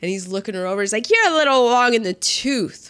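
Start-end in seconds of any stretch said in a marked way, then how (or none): 1.1-2.7 slow, smooth, slick wise guy voice. Retelling a man looking an actress over: wise guy voice. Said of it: "he talks like a wise guy".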